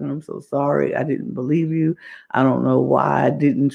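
mock tearful, crying voice. Retelling how she apologized to Monet, imitating someone crying. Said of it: "She's crying".

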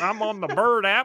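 loud, drawn-out put-on rural country accent. Imitating how he talked on Fun Pop, doing a country accent. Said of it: "He just did like a country accent".

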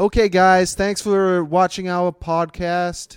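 upbeat American accent. Podcast host trying their best American accent: put-on American accent. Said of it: "Let's do your best American accent".

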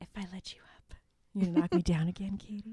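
whispering softly. Acting out a character's line to a friend, whispering. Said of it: "And he whispers it".

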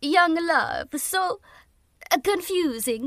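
bad fake Italian accent. Speaker, talking with a co-host and listeners, attempts an accent: bad Italian accent. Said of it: "I'm going to attempt an Italian accent and fail miserably".

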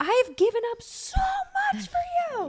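very loud, shrill, high-pitched angry shriek. Recounting being at wit's end with someone, retelling a scream. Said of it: "I screamed like".

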